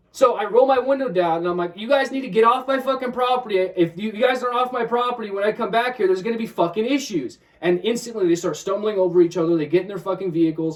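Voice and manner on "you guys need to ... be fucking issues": put-on yelling, higher. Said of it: "I start yelling".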